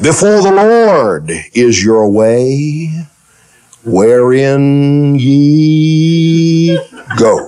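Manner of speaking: put-on pious priestly sermon voice, drawn-out "ye". Retelling a Bible story, acting out a robed man's words, most religious voice. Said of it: "He put on his most religious voice".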